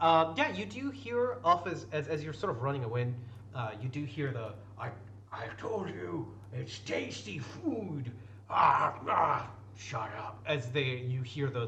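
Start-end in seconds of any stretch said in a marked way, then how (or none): 4.8-10.4 put-on ogre voice, far from natural voice. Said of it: "the two ogres, uh, talking behind you".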